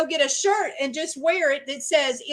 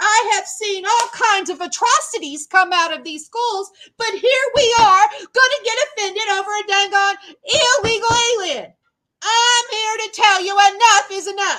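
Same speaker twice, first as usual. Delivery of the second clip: furious, unleashed, loud, high angry screaming; 5 semitones higher, 5 dB louder than usual. Ranting to viewers, getting mad: angry screaming. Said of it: "I'm sorry I'm screaming".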